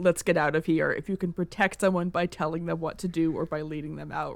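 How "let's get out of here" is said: usual speaking voice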